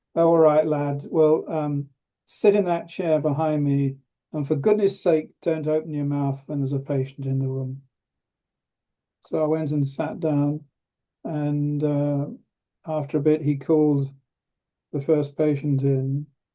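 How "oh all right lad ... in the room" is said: plain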